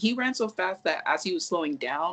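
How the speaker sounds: ordinary talk, nothing marked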